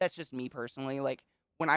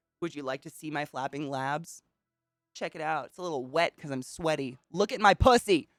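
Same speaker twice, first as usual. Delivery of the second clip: scathing, harsh, biting sarcastic tone; 2 semitones higher than usual. Acting out a reply to macho pressure to work harder: put-on harsh sarcasm. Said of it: "I would be very harshly sarcastic about it".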